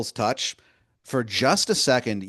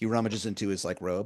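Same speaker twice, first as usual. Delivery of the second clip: normal talking voice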